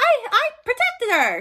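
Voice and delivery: squeaked out loud and high. Retelling a stage scene, voicing a returning character in a weird Mickey Mouse voice. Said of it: "I don't know why I did that weird Mickey Mouse voice".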